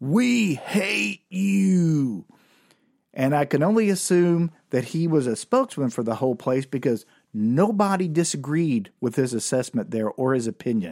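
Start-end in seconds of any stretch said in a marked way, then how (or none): 0.0-2.3 play-acted, rough, high, drawn-out heckler jeer. Recalling being on stage, the speaker imitates a man at the back yelling. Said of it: "this dude from the back yelled out".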